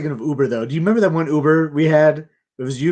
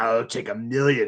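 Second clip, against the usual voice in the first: eerie, unsettling, slow, creepy, drawn-out delivery; 4 semitones lower, 5 dB quieter than usual. Retelling what an Uber driver said on the phone: imitating a creepy line. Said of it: "The way he said it, like, creeped me out".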